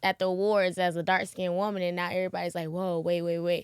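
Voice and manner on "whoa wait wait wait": plain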